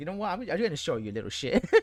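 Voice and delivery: put-on loud, high, angry, fed-up, pissed-off outburst. Voicing what a game character seems to think: imitating someone pissed off. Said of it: "she's so pissed, and she goes like".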